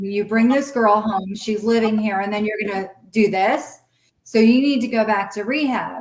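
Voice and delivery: ordinary talk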